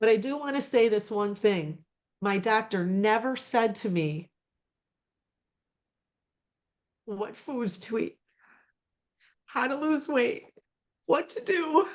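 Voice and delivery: tearful, crying through the words. Telling about their doctor and cholesterol, crying while speaking. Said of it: "I'm sorry I'm crying".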